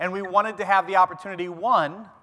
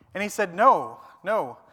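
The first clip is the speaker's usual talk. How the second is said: ordinary talk, nothing marked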